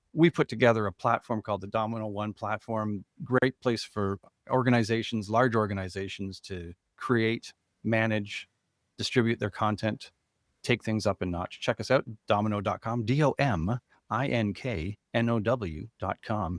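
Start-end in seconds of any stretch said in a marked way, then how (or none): 11.6-16.5 slow, sultry, sexy radio announcer voice. Plugging the company's platform to listeners, in a sexy radio voice. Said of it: "he said in his sexy radio voice".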